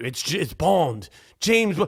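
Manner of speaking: put-on British accent. Joking about an American playing James Bond, doing the accent. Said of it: "I could do the accent".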